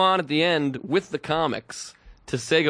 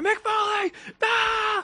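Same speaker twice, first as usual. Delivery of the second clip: put-on very high, screaming-and-crying fan shriek. Retelling two kids seeing mick foley come on stage, imitating kids screaming. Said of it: "these two kids are still screaming".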